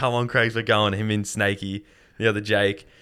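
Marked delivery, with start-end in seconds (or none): none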